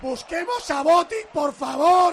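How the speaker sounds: loud, high stretched-out shout.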